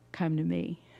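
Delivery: barely-there, very quiet, hushed voice. Quoting a voice that calls during a heart attack: very quiet voice of Jesus. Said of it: "that very quiet voice".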